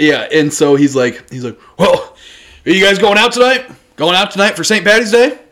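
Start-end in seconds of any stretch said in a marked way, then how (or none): 1.8-5.3 man's pitched-up, hollered yell. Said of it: "So now he's yelling back to the".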